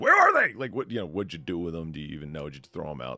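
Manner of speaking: mock accusing tone, swooping pitch. Retelling what a mother said about missing degrees: imitating an accusing voice. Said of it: "with this accusational voice".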